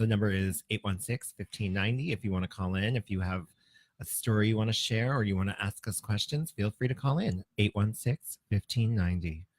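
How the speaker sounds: sultry voice. Giving out the call-in phone number: very sultry voice. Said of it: "you do that with a very sultry voice".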